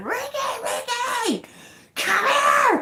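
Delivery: mock very high, very slow, drawn-out scream. Retelling spotting creatures while fishing, calling a friend over: retelling own scream. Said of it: "I'm screaming".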